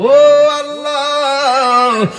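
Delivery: high, very slow, loud drawn-out cry.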